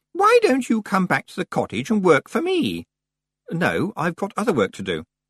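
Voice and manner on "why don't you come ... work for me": high, bright, brittle voice close to breaking. A woman makes a sudden offer, bright as a crystal about to shatter. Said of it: "as bright as a crystal that was about to shatter".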